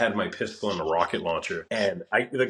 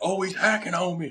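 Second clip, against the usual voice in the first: put-on very high, elderly old man voice; 9 semitones higher than usual. Speaker quotes an opponent from an online game; imitating a grandpa voice. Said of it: "he sounded like he was like very like like like a grandpa".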